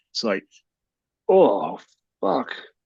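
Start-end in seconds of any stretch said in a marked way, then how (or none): none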